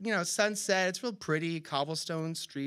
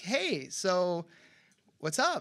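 put-on breezy tone, much slower. Retelling phoning a contact you barely remember, imitating sounding breezy. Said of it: "managed to sound breezy".

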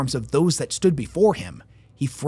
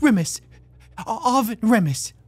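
high, rasping voice with scraped-out words; 8 semitones higher than usual. A man held in a painful grip gives his name to the woman questioning him, rasping. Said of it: "he rasped".

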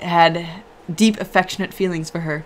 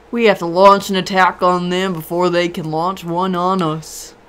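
odd, beefed-up, manly southern drawl. Reading Jim's line in a group story, weird southern-y accent. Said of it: "So it's just a random, unnamed Jedi, but she's apparently really close. Okay, well... His name is [name]. ... It's kind of like my weird southern-y accent, it's but like, a little yeah. manlier. I got you. Good, so both of my characters are gonna have that accent. ... manlier".

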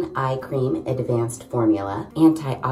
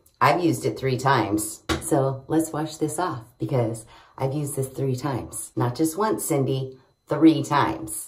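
plain

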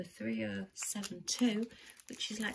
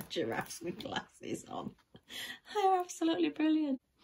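laughing, high and swooping, words broken up; 6 semitones higher than usual. Speaker apologizes while looking at a picture, still laughing. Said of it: "I'm sorry, I'm still laughing".

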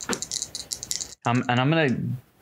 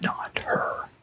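soft unvoiced whisper. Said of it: "I'm gonna whisper".

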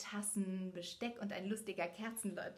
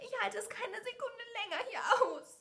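despairing cry, pitched very high; 14 semitones higher, 3 dB louder than usual. A narrator reads Belle's line after the Beast roars at her, crying out in despair. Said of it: "rief sie verzweifelt".

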